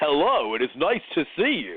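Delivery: slow, drawn-out dub voice swinging up and down. Describing dubbed martial arts films, imitating Bruce Lee's English dub voice. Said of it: "and then talk and be like".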